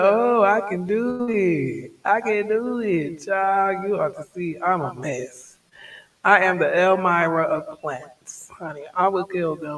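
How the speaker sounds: sassy, boastful tone.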